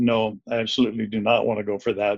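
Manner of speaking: ordinary delivery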